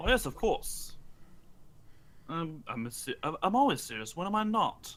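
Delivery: dead straight, low and soft. Player voicing Eric, asked if he is being serious, deadpan. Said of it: "Eric is completely deadpan".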